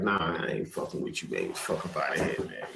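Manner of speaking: whispered, blunt, dismissive brush-off tone. Retelling a wrestler brushing off the boss: Stone Cold impression. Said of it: "Stone Cold, like".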